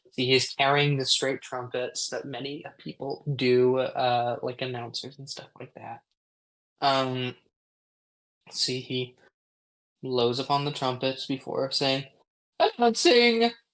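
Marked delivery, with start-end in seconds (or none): 12.6-13.5 loud trumpeting herald-style call, voice cracking very high. A herald blows his trumpets, then calls out: herald announcing, voice cracking. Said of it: "voice crack".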